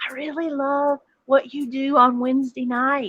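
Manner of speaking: soft, hushed stage whisper. Retelling half-whispering into someone's ear when meeting him: retelling a half-whisper. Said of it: "I whispered into his ear".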